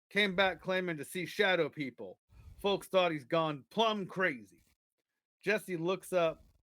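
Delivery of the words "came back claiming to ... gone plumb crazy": ordinary talk, nothing marked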